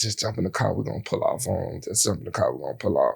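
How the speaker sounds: soft, quiet whisper. Retelling urging a friend to jump in the car: retelling a whisper. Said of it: "we whispering to him".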